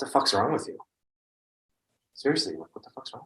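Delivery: furious, angry outburst, said twice over. Your hands are shaking and you are asked what to say to this one; angry. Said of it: "I'm so angry right now".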